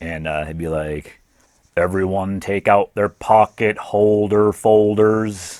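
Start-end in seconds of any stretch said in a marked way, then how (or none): 1.8-5.6 loud, very slow, dragging, drawn-out teacher voice. Recalling a shop class teacher's interesting voice, imitating slow-talking shop teacher. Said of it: "he talked very slow".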